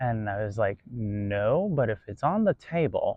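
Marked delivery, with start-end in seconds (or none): 0.9-3.2 slow, sarcastic, with a long drawn-out no. Recounting a reply to an upset woman at a pizza shop, retelling a sarcastic reply. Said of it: "being sarcastic".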